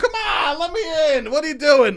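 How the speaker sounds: mock small, very high-pitched little yell. Acting out trying to get in somewhere, retelling a little yell. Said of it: "Like a little yell".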